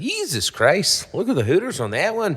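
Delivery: fake, bad Canadian accent, very high and swooping. Trying out accents from different countries, now Canada: put-on Canadian accent. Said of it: "Or like if you're in Canada".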